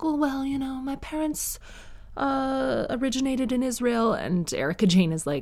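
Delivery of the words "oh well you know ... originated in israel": put-on vague British accent, higher pitch. Speaker retelling a famous TV scene, Dorit's sort-of British accent. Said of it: "Dorit sort of speaks with a British accent".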